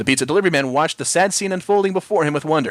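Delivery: plain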